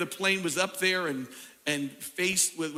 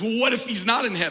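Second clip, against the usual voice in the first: put-on snide, needling, smug, sarcastic voice; 3 semitones higher, 6 dB louder than usual. Telling a story, the speaker acts out a man's answer to a lady, imitating a sarcastic reply. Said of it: "he smiled sarcastically and says".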